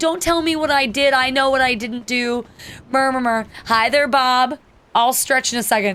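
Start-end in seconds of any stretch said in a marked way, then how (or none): 0.0-2.5 crying, tearful voice, words spoken through tears. Retelling what an elderly woman said when confronted: imitating someone crying. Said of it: "she starts crying".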